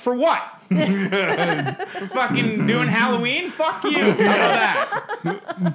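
mock indignant outburst, high and slow.

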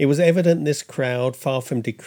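ordinary delivery

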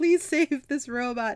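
high, begging, imploring voice. Recounting a show where a kid begs the Rangers, retelling a plea. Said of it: "Dylan is just pleading".

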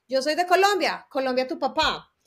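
play-acted, light called-out shout from a distance. Retelling a show where the host asked people where they were from: retelling a shout. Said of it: "Y yo grito".

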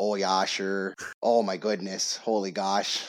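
slow, cliché Minnesotan accent. A co-host from Minnesota mocking a stereotype, stereotypical Minnesota accent. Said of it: "We don't all talk like that".

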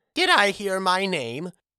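small, squeaky, tiny, high-pitched voice. Narrator reads a story where a character answers right after being called; squeaky small Gergen voice. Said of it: "Squeaked a small voice".

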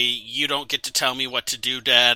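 ordinary talk

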